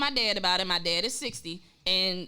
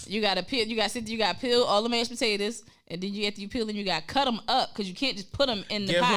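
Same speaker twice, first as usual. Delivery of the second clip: ordinary talk, nothing marked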